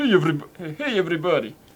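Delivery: exaggerated Russian accent. Showing a stereotypical Russian accent: stereotypical Russian accent. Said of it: "the most stereotypical Russian accent".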